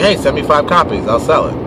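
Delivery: normal talking voice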